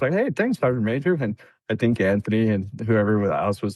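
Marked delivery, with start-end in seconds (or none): 0.1-1.1 sarcastic, falsely grateful tone, pitched up. Retelling his answer to the sergeant major: retelling own sarcastic thanks. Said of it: "Me too".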